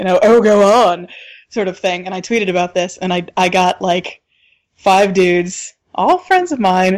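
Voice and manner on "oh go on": overly showy, grand, theatrical, dramatic politeness. Retelling how a guy on the subway waved them ahead: imitating a dramatic stranger. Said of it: "in this very, like, dramatic".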